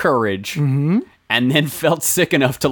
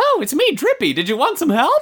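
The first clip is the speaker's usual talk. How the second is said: very high, almost cartoon mouse voice. Describing a helper character in a game, voicing him: almost Mickey Mouse voice. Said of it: "my almost Mickey Mouse voice".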